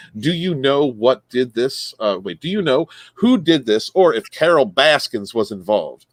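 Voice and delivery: ordinary talk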